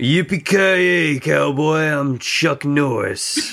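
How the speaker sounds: put-on tough cowboy voice. Trying an impression after being asked for one: Chuck Norris voice. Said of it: "The fuck does Chuck Norris sound like?".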